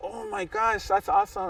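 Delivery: very high, excited, starstruck gush.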